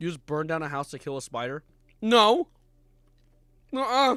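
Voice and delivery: mouth full, chewing while speaking. Reacting to YouTube chat with a mouthful of Skittles, mouth full, chewing. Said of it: "I feel like I'm chewing on cement right now".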